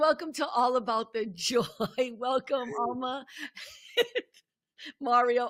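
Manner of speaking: speech broken up by giggles. Host welcoming guests to the show, giggling. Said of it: "I'm sorry, I'm giggling".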